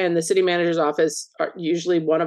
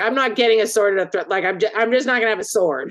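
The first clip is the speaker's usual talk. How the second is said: put-on irritated, huffy, bent-out-of-shape tone; 4 semitones higher than usual. Retelling her reply to being told she needs a sword: imitating someone annoyed. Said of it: "she was all bent out of shape".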